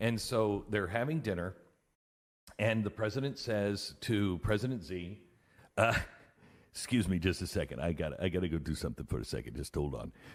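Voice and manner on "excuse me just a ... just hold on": put-on deep, quick, rattled-off Russian accent. The president excuses himself from dinner with President Xi; play Trump as a deep-voiced Russian. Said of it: "make Trump sound like a deep voiced Russian".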